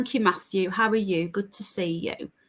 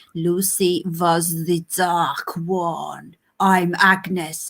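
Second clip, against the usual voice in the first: put-on odd, strange French accent, one word drawn out; 3 semitones lower than usual. Retelling what a woman said when she came in, imitating Agnes's weird French voice. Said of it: "in this weird French voice".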